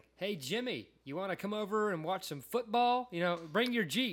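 very high, loud put-on American accent. Retelling how an accented man tried his best American, imitating an American accent. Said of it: "I'm going to do my best American".

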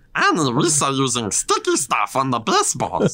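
slow, drawn-out character voice with swooping pitch. Repeating a line for the other speaker in a Jar Jar Binks voice. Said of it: "It's a good Jar Jar".

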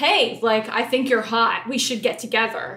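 clinical, no-frills, direct, matter-of-fact, blunt delivery. Retelling a contestant's direct pitch to a match: imitating Carrie. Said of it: "Great impression".

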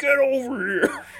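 high-pitched, slow, loud battle cry.

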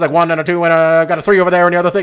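fast, put-on auctioneer voice. Retelling how someone on a show slipped into a bit, auctioneer voice. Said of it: "started doing the auctioneer voice".

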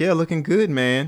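knowing, mocking, sarcastic tone. Retelling a comment left on an impostor's page: sarcastic. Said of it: "I was being sarcastic".

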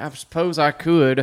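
put-on Southern drawl. Answering the film line in character: Billy Bob impression. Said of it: "I can't say anything else as him".

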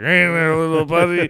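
put-on drunk voice. Retelling a drunk friend talking to children: imitating a drunk friend. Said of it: "he's fucking drunk".

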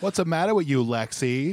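loud, high, terrible put-on Boston accent. Imitating a movie character's overdone accent: imitating Jack's bad Boston accent. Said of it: "With the worst accent I've ever heard".

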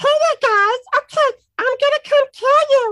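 loud, squeaky, high-pitched voice. Showing how they mess with people in a game, in an Elmo voice. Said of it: "I've do my Elmo voice".

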